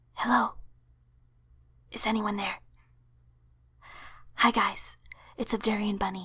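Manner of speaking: hushed soft whisper. Greeting viewers while the father is upstairs playing a game, whispering. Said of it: "I'm whispering".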